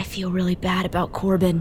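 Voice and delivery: in a whisper. Turning back to Red to speak: whispering. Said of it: "I kind of whisper".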